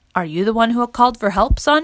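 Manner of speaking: plain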